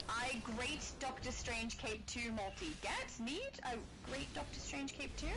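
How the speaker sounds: usual speaking voice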